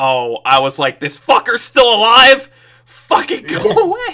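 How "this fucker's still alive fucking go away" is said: exasperated, very high, loud, climbing scream. Asked if they screamed when a character came back to life; retelling screaming at the screen. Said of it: "did you scream that?".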